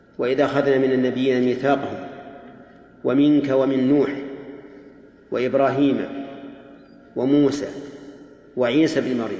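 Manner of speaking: ordinary talk, nothing marked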